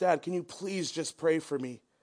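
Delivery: mock begging, acted pleading. Speaker retells begging their dad for help, imitating themself begging. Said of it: "I'm begging him".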